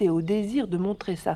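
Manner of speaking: ordinary delivery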